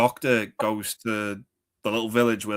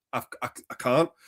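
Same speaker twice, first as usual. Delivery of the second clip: ordinary talk, nothing marked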